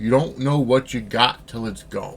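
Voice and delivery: ordinary talk, nothing marked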